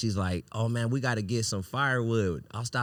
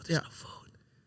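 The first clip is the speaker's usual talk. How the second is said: hushed, soft, breathy whisper under the breath; 7 semitones higher, 7 dB quieter than usual. Retelling a trip with no food, imitating own whisper. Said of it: "I had to whisper".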